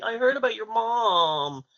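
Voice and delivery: mock sympathetic tone. Retelling how coworkers greeted him after a robbery: imitating a weird sympathetic tint. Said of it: "with that weird tint in their voice".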